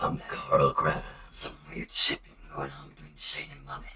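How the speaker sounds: put-on soft, breathy, whispered small child voice. Retelling how someone imitated a character, Carl voice. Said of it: "doing that voice as Carl".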